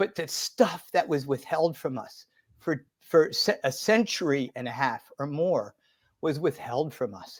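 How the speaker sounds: soft, moved, feeling-filled emotional voice. Speaker apologizes mid-story, getting emotional. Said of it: "I'm getting emotional".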